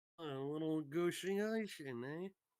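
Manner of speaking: put-on New York wiseguy mobster accent. Acting out a scene with others, speaking in a new york mobster accent. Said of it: "He speaks like a New York mobster".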